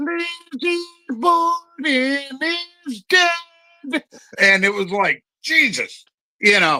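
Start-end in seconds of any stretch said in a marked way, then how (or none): 0.0-4.0 tiny, eerie voice, very high and slow. Retelling a line from a TV movie commercial: little creepy voice. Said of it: "this little creepy voice going".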